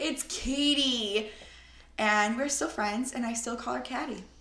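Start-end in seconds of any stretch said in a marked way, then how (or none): 0.0-1.3 mock-exasperated yell with a drawn-out word. Retelling telling a friend how to correct the professor: mock-exasperated yell. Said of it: "like exasperated voice".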